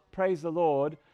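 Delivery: weak, pathetic, soft, half-hearted, no energy. Showing listeners how not to shout the phrase: weak, pathetic delivery. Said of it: "Not like that, not praise the Lord. That's kind of pathetic".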